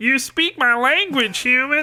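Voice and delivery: theatrical dragon creature voice. After asking if the listener is ready, the speaker does a dragon voice. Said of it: "you ready for my dragon voice?".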